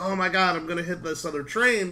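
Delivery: normal talking voice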